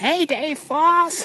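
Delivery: very high-pitched, scratchy voice. Retelling a shout from the crowd during the marathon: imitating Carol's scratchy voice. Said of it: "she actually has kind of a scratchy voice like that".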